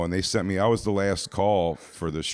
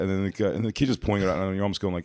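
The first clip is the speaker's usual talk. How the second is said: ordinary talk, nothing marked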